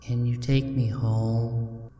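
eerily calm, quiet, with home drawn out. A woman asks the driver who stopped for her, in a calm, almost eerie voice. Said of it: "She asks in a very calm and almost eerie voice".

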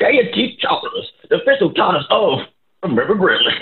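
put-on 19th-century Southern accent. A host reads the sponsor promo in an exquisite 19th-century Southern accent. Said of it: "That was an exquisite accent".

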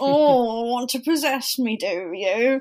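high, loud voice, every word drawn out. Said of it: "they all sound like Alan Partridge".

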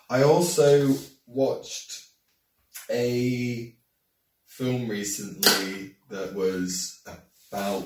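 very slow, trailing delivery. Telling friends about a film seen recently, talking really slowly. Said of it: "talking really slow?".

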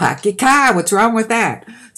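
Bostonian accent. Explaining how people reacted to the speaker's accent, then demonstrating it: Bostonian accent. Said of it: "my Bostonian accent".

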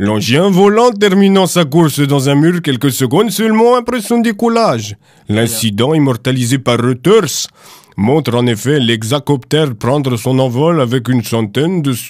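put-on Russian accent in newsreader style. Reading a short news item aloud to the chat: put-on russian accent. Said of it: "tu veux que je la lise avec l'accent russe ?".

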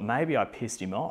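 ordinary delivery

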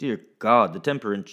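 ordinary delivery

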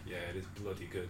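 put-on, very quiet, low, bone-dry flat deadpan. Retelling how someone chipped in with a reply, retelling a deadpan reply. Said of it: "chips in with the most deadpan ever".

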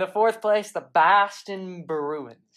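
bad, weak, loud put-on Boston accent. Trying an accent the listener says needs work: bad Boston accent. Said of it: "We can work on the accent".

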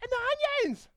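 put-on heckling yell, very high. Acting out someone in the crowd complaining to Moses: imitating someone yelling. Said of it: "somebody else yelled out".

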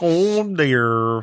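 sagging, droopy, hangdog cartoon dog voice. Asked for a Droopy Dog impression, trying it out for the other speaker: Droopy Dog voice. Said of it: "Droopy Dog".

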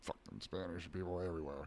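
very quiet, very low under-breath grumble. Retelling what a man muttered on coming in: imitating someone muttering under breath. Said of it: "kinda muttered under his breath a little".

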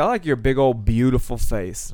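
put-on slight southern twang accent. Quoting Taylor's compliment, imitating Taylor's slight southern accent. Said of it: "she gets a little southern".

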